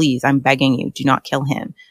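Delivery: put-on desperate, begging tone. Quoting a character pleading for a loved one's life, acting out begging. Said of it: "I like somebody begging for the life of someone they love".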